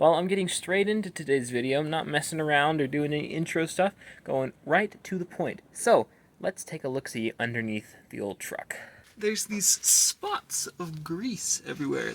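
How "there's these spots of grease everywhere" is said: voice cracking mid-line. Lying under a truck while filming a video, voice cracking. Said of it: "That was an awesome voice crack".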